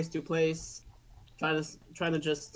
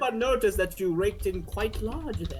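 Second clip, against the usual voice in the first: put-on British accent; 3 semitones higher, 3 dB louder than usual. Answering what they say to a man who walks up: mock British accent. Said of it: "in my mock British accent".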